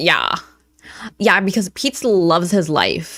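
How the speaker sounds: play-acted, deeply affronted, very offended tone. Imitating how she talks when offended: imitating someone super offended. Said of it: "super offended whenever she's like".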